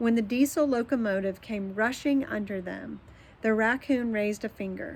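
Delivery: ordinary delivery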